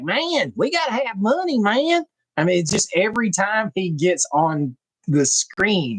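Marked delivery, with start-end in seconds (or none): 0.0-2.0 put-on over-the-top Kentucky accent, very high, swooping. Describing a guy who steals the show in a movie, imitating an exaggerated Kentucky accent. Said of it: "He talks like this the whole time".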